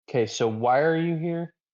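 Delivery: weary sigh. Voicing a character who sighs, then asks why they came: sighing. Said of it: "kinda sigh and be like".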